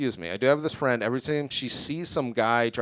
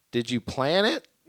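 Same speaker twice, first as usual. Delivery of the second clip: voice cracking mid-phrase. Retelling the question put to a couple the speaker knows, retelling a voice crack. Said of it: "My voice cracked like that".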